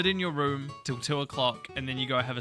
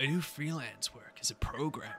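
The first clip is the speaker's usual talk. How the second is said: put-on edgy, depressed emo voice, quieter; 4 dB quieter than usual. Playing a game, voicing a character asked what he's working on: edgy emo boy voice. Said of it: "That's our little edgy emo boy. ... Owl depressed cat boy".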